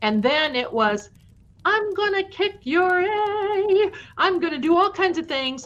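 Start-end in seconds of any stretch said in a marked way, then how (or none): 1.6-5.7 very high, shrill scream with A drawn out. Retelling threats shouted from behind the basement door: imitating someone screaming.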